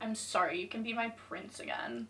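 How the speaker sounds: very bitchy, snide tone. Retelling own forced childhood apology after a teacher's order: imitating a bitchy tone. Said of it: "I said in the most bitchiest tone".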